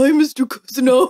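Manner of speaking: really dumb, dopey voice, as dumb as possible. Showing how he makes Barry sound when greeting Mister Cousineau, really dumb Barry voice. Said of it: "is making Barry's voice this really dumb".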